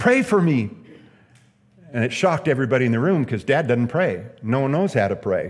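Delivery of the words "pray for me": put-on, sudden, loud, high outcry. Retelling a man on his deathbed crying out: imitating a loud cry. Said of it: "he cried out in a loud voice".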